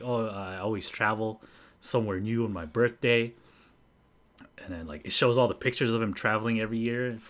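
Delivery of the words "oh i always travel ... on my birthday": chill, unbothered, laid-back, easygoing bro voice. Retelling what a traveler on a show said: imitating a chill guy. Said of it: "He's all chill and shit".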